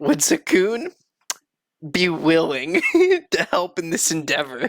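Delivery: put-on very drunk voice. A player, in character, asks whether another character will help, very drunk voice. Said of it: "Like very drunkenly".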